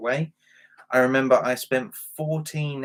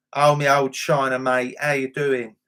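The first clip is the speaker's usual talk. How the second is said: put-on loud old-time East London Cockney accent; 5 dB louder than usual. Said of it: "that kind of Cockney".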